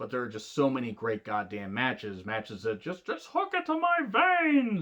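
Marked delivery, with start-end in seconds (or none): 3.1-4.8 cheesy cartoon voice, high and swinging in pitch. A speaker ranking matches for viewers says this in a terrible Barney impression. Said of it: "terrible Barney impression from The Simpsons".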